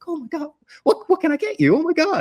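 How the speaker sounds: very high-pitched puppy-dog voice. Retelling how a character spoke when she woke up: imitating a high puppy dog voice. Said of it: "He's almost like puppy dog voice".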